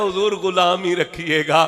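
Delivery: plain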